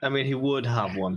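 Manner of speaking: ordinary delivery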